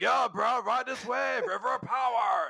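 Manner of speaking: surfer-dude drawl, slow and creaky. Imagining the last Digimon of the Seadramon line talking, in a surfer dude voice. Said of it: "he is going to talk like a surfer dude".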